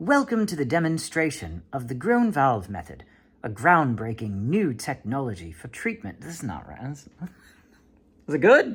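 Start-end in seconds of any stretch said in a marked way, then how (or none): 0.0-6.2 reading in a British accent. Speaker reads a script aloud for british listeners, british accent. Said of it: "it was for British voice".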